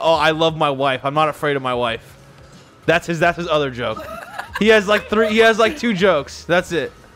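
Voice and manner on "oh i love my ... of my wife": mock, heavily sarcastic delivery. Describing the jokes a man keeps telling next to the speaker's mom, mock-sarcastic. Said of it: "he'll just keep saying sarcastically".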